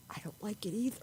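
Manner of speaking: confiding, soft, hushed whisper close to ear. Retelling how the guard came close and whispered in her ear: whispering. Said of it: "he whispers in her ear".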